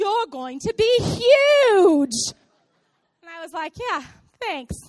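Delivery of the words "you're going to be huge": very loud, very slow, put-on English accent. Retelling what a man said to her while she was pregnant, imitating his accent. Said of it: "I'm going to try to do his accent".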